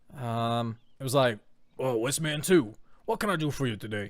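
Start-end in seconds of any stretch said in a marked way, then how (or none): 1.7-4.1 put-on old-west cowboy-style character voice. Recalling the first episode's voice for the character Rowan: Rowan's old cowboy voice. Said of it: "But it was more like, "I'm a cowboy."".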